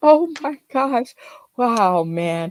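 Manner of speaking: talking through laughter. Reacting to a guest's joke, laughing while talking. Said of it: "I gotta stop laughing".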